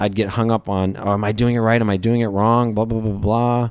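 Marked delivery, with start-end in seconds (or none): none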